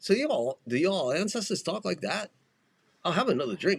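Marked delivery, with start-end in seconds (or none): 3.0-3.8 put-on Scottish accent. Trying a Scottish accent as Scotty from Star Trek. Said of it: "let me see if I can get my Scottish down".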